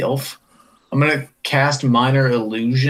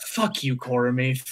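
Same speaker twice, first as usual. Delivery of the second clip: loud whisper, muttered under breath, quieter; 8 dB quieter than usual. In a role-play scene, a character reacts to a request: loud whisper under breath. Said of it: "I whisper pretty loudly under my breath".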